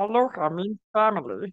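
cartoon alien creature voice. Showing off voices they can do: Stitch voice. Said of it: "I can do Stitch from Lilo and Stitch".

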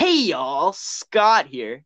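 happy, bright, swooping, slow sing-song voice. Retrying the greeting after being told to be happier: happier Scott the Woz impression. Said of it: "you have to be more happy".

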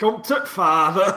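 put-on working-class English accent. Imitating the original undubbed film line: imitating the original English line. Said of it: "you hear the original fucking audio and it's like".

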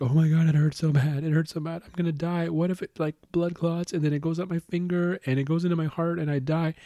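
blubbering, tearful sob-talk in a high-pitched crying voice. Retelling what a girl said after slamming her finger in a door, imitating someone crying. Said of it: "and she starts crying".

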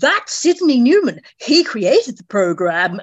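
put-on posh received pronunciation accent. Telling someone who is in the photograph, in best RP accent. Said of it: "in my very best RP voice".

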